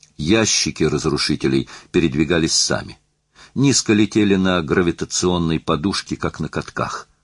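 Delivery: ordinary delivery, nothing marked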